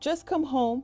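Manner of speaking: ordinary delivery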